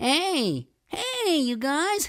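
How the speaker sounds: very high, tight, squeezy whine. Teaching larynx position, the speaker demonstrates a squeezy, whiny high-larynx sound. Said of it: "If my larynx is high, it sounds like this".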